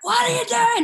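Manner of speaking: mock very high, loud, shrill screamo-style screech. Retelling the night at a bar she first screamed, retelling a loud scream. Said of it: "Like so loud".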